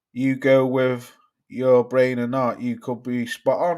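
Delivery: ordinary talk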